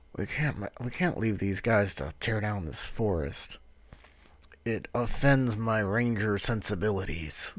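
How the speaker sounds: hushed, half-whispered aside. Speaking as a ranger character, half-whispering in character to a companion. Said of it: "I'll I'll whisper to Kios".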